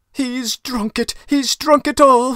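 shrill, piercing, very high, loud despairing scream. The poor woman cries out in front of her children; screamed in despair. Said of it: "the poor woman screamed in despair".

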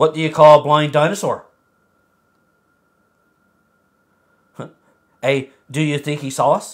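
patronizing, superior, condescending, talking-down tone. Reading a joke aloud because a game prompt asks for it, condescending. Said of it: "Read the joke in a condescending tone".

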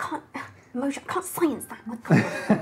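quiet muttering and mumbling under the breath. In character, working out a vague magic ritual: muttering under breath. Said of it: "under my breath".

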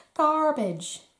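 high-pitched mock American accent. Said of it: "Do you like my American accent?".

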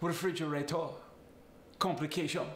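Italian accent, final r fading. Explaining how the r fades in italian speech, giving examples: italian accent. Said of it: "Another thing I love about the Italian accent".

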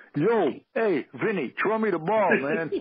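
thick, heavy New York street accent. Showing how their speech would normally sound, unminimized: heavy New York accent. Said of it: "Normally, it would sound something like".

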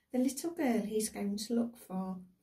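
ordinary delivery, nothing marked

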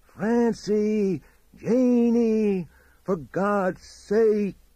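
very high, very slow, desperate, terrified drawn-out scream. Reading a story where a man screams into the night: desperate scream. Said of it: "screamed into the night".

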